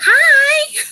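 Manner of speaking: very high, loud, squeaky voice. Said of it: "my voice on my voice mail, like, when it picks up, it's all".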